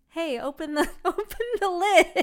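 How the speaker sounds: high, laughing, mock-stern voice.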